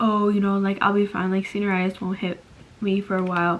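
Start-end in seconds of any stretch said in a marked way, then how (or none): none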